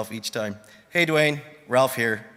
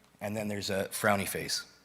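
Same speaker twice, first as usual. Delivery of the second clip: ordinary talk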